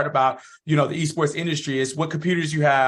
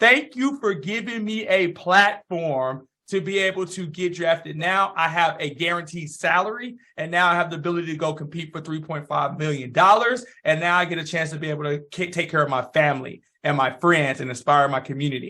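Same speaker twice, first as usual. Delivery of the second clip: ordinary delivery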